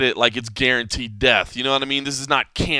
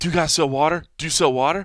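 frantic, desperate, urgent, repeated; 3 semitones higher than usual. Retelling a customer asking the store clerk for water: imitating a frantic man. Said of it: "almost frantic".

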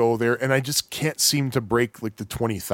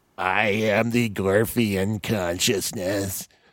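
put-on weedy, wimpy, nerdy character voice; 3 semitones lower than usual. Sharing a personal impression from the game: wimpy, nerdy Gorf impression. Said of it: "Here's my personal impression of Gorf".

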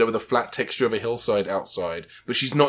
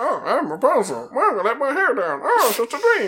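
very high, swooping, sing-song cartoon parrot chatter; 12 semitones higher than usual. Speaker discussing a movie, imitating Barbie playing her character, Barbie cartoon-parrot voice. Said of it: "she sounds like a cartoon parrot".

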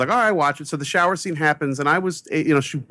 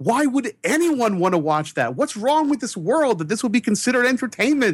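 high, angry, upset shouting outburst; 8 semitones higher than usual. Recalling being terrified as an 8-year-old, retelling yelling at the world. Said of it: "I was yelling at the world".

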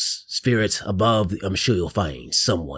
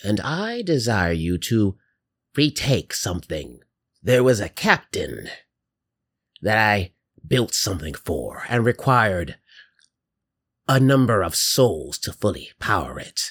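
put-on kindly, grandmotherly old-lady eldritch horror monster voice. As an eldritch horror giving three undead pirates a task, grandmotherly eldritch horror voice. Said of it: "Given a new undead life, three pirates find themselves bound to a rather grandmotherly eldritch horror".

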